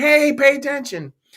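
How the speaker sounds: high, loud mock yell. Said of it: "yell at us like".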